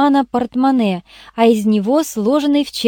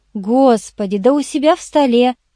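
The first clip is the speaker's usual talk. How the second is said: usual speaking voice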